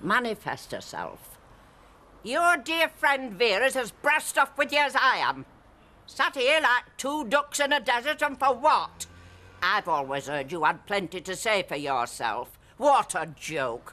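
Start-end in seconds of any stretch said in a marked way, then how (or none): 2.2-13.9 very high, goading shout. During an attempt to make contact, provoking a spirit to manifest, shouting. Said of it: "You've got to shout, love".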